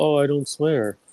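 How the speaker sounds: sarcastic, slow, prim, goody-goody fake tone. Mocking someone who acts too proper to swear: mocking a fake prim person. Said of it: "Not this fucking fake ass".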